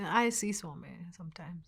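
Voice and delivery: put-on, acted mumbled words. Recounting being told to say it, the speaker re-enacts mumbling his answer. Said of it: "So I mumble".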